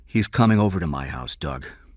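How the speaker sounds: plain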